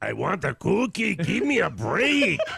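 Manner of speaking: loud, rough, rasping voice. Answering a caller who asked for George Lopez doing Cookie Monster: George Lopez doing Cookie Monster. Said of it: "an impression of George Lopez doing Cookie Monster".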